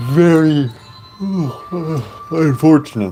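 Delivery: speech broken by yawn. Sleepy streamer talking about the last stream, yawning while talking. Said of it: "Sorry, I'm yawning".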